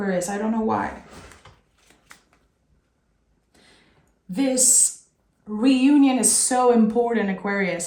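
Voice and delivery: choked-up, tearful, weepy crying voice. Giving an Aquarius reading to viewers, crying. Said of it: "I can't believe I'm crying".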